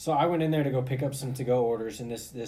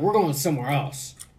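super loud, blurted, room-filling delivery; 3 semitones higher, 6 dB louder than usual. Retelling what an old man said after standing there two seconds, super loud. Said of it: "super loud".

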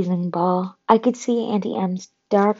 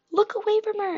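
very high-pitched, alarmed, shouted delivery; 13 semitones higher, 5 dB quieter than usual. Annabeth warns Grover and the narrator, shouting. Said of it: "Annabeth shouted".

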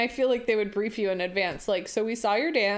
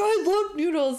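put-on, sudden, high-pitched shouted outburst; 9 semitones higher, 3 dB louder than usual. Speaker retells how a man shouted when he finally understood: retelling a shout. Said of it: "But you don't have to shout".

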